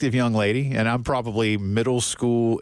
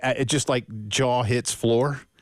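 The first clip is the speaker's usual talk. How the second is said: ordinary delivery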